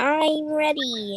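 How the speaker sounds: high, goofy cartoon voice. Speaker tries out a voice for the others in the conversation, SpongeBob voice. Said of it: "let's see if I can do SpongeBob".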